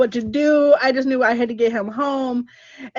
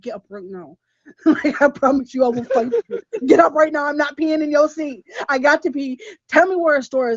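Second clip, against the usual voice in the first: put-on mother voice, taking charge; 2 semitones higher than usual. Retelling waking a sleeping man to find a store, in a put-on mom voice. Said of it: "I had to like put my mom voice".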